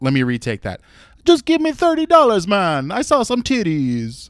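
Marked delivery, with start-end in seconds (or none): 1.3-4.3 very high, sing-song, swooping put-on Jamaican accent. Retaking his line while describing the scene, in a jamaican accent. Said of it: "That's how good his Jamaican accent was".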